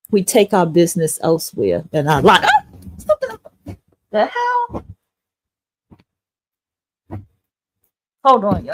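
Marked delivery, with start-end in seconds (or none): 2.9-8.7 sudden startled fright, higher and quieter. Suddenly startled by a blanket while talking, reacting in startled panic. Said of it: "I'm panicking".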